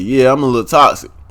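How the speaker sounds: ordinary talk, nothing marked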